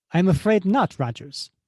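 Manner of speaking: fake Italian accent, female voice. In a roleplay, the speaker voices Contessa addressing Rogers in a female Italian accent. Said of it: "I have to do a female Italian voice".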